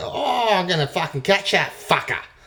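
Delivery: put-on high, loud Australian accent.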